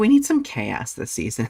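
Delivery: ordinary talk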